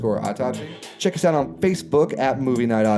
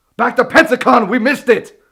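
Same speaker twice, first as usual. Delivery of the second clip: frantic scientist voice, much higher, louder; 12 semitones higher, 8 dB louder than usual. Keeping up a bit while the other speaker objects, in a Doc Brown voice. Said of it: "will you stop doing the Doc Brown voice?".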